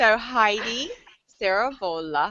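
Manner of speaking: put-on Italian accent on a name. A show host introduces a co-host by name, in her best italian accent. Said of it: "I have to say it with my best Italian accent".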